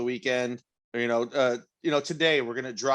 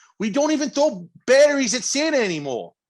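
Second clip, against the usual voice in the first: put-on Philadelphia accent, squeaky, very high, loud; 12 semitones higher, 6 dB louder than usual. Joking about their own Philly-adjacent accents: attempted Philly accent. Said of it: "I feel like our accents are like".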